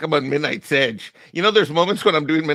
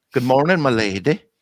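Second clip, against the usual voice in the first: put-on Mexican accent, uppity in tone; 2 semitones lower than usual. Greeting a chat member again after stopping himself: uppity mexican voice. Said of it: "I'm trying to sound like an uppity Mexican".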